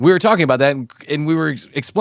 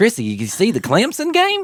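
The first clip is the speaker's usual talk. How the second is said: high, swooping, funny sing-song voice; 7 semitones higher than usual. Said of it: "if I said the name and then I did the voice".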